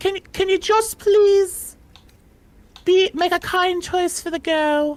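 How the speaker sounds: very high, begging, pleading made-up voice. Voicing a character who asks the player to make a kind choice, pleading. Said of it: "let me make a voice here".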